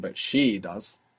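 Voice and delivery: the word she said with heavy stress. Showing how english marks contrast with the voice: stress on she. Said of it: "you will stress it with your voice".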